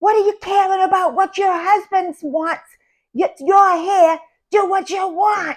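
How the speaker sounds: mock yell, pitched way up, very high, shrill. Speaker recounts what they yelled at a woman, retelling a yell. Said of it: "And I yelled".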